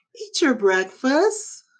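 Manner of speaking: very high, sunny, cheery and happy tone. Asked to say the same line like you're happy: happy. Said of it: "Now say it like you're happy".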